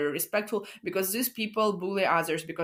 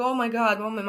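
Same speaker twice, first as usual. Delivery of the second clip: mock-guilty, higher and slower; 5 semitones higher, 4 dB louder than usual. Describing turning into a savior toward her mother: acting out guilty past self. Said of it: "I would feel so guilty".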